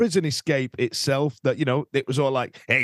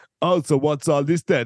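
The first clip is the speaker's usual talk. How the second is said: mock swaggering, cocky, self-assured put-on tone; 3 dB louder than usual. Retelling a film scene, imitating a character: imitating a cocky persona. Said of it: "he adopts this really cocky persona".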